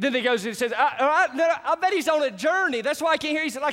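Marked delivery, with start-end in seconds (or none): 0.8-3.4 high, jeering, mocking taunt. Retelling a prophet taunting rival prophets whose god won't answer: imitating a mocking taunt. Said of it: "the Bible says that he began to mock them".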